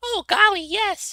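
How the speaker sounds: put-on very high, loud little kid voice. Showing how a little kid would answer a question about a secret, in a little kid voice. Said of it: "I'm gonna do a little kid voice now".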